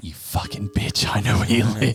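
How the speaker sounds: pretend angry voice. Picturing the other leaving a voicemail for a company: pretend angry voicemail. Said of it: "an angry voicemail".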